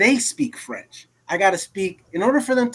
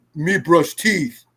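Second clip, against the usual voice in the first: broken, caveman-style talk; 3 semitones lower than usual. Describing how broken French sounded to her, talking like Tarzan. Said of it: "you speak French like Tarzan".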